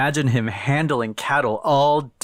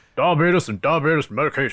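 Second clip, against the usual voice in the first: put-on acted elderly man voice; 3 semitones higher than usual. Imitating Wilford Brimley saying one word: Wilford Brimley voice. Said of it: "All I know is him saying".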